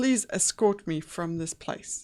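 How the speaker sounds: ordinary delivery, nothing marked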